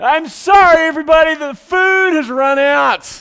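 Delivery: very loud, high bellow. Retelling a man standing up before a crowded feast line, in his biggest, loudest voice. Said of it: "in his biggest and loudest voice and says".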